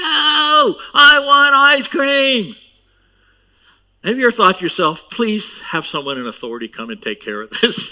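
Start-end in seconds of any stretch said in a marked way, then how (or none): 0.0-2.6 put-on very slow, stretched-out, loud, high child's tantrum. Describing a child throwing himself on the ground, imitating a child's tantrum. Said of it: "like a child is, throwing himself on the ground".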